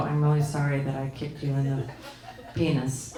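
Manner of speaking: put-on very low, hushed, insincere, grudging kid voice. Comparing a voice assistant's apologies to her kids' forced apologies, fake-sorry child's apology. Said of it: "she doesn't sound sorry about it".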